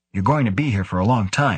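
ordinary delivery

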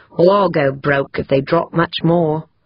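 plain

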